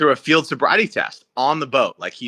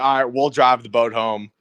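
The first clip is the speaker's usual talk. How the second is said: ordinary delivery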